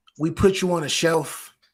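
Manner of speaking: ordinary talk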